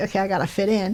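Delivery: plain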